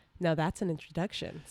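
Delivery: movie-trailer style delivery. Retelling a line from a movie trailer: imitating Amy Adams. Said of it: "So that's me being Amy Adams".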